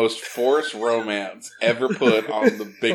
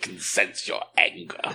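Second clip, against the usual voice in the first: put-on sinister villain voice, lower pitch; 3 semitones lower, 4 dB quieter than usual. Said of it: "You sound like Palpatine".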